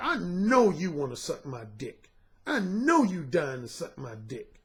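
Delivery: slow, self-assured, cocky tone full of attitude. Retelling what was said to a woman who followed outside: retelling own cocky attitude. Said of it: "with an attitude like".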